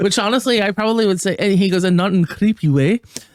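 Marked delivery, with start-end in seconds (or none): 1.8-3.0 put-on Scottish accent. Retelling a TikTok guy's message to Reese Witherspoon: imitating a Scottish accent. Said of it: "he's got this great Scottish accent".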